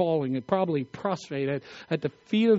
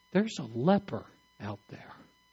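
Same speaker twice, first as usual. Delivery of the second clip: plain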